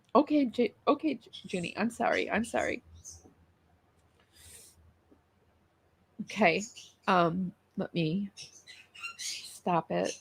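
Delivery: tearful after crying. Trying to read something aloud after crying: upset after crying. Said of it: "I've been crying and I can't even read it".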